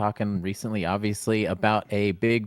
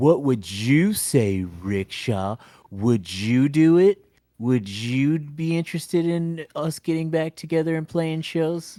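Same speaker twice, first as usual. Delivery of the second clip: hopeful voice, pitched up higher; 6 semitones higher than usual. Retelling a question she asked the speaker, imitating a friend's voice. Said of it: "Bitch, I don't even sound like that".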